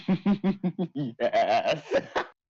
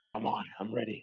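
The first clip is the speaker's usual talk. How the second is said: sinister tone, lower and quieter; 3 semitones lower, 9 dB quieter than usual. Demanding to be given the result during a game: sounding evil. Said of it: "you sound so evil".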